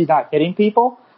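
usual speaking voice

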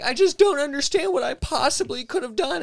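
very high, play-acted, distressed, upset voice. Retelling to Stevie how he sounded after being told he was fired: imitating Stevie upset, distressed. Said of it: "He was real upset and distressed".

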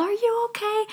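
put-on, very high-pitched yelling voice. Retelling how she yelled to the speaker lying in the water: retelling her yell. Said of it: "she yelled".

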